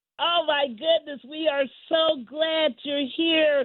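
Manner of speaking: voice full of joy, beaming. Host welcoming a long-sought guest onto the show, joyful. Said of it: "if you hear the joy in my voice".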